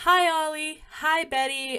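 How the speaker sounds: high, loud yell. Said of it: "fans in the front row yell".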